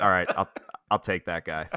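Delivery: flat monotone coach voice. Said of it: "two of the most monotone, like, boring speakers".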